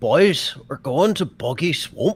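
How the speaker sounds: put-on high, gruff Scottish accent. Asked to do a Shrek accent, trying one for the others. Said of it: "You could do a Shrek accent".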